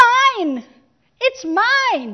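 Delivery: put-on high, loud child's scream, shrieking.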